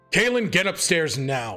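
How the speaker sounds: loud, commanding, authoritative voice. Ordering a character upstairs in a game scene: loud authoritative voice. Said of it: "I'm sorry I had to get loud".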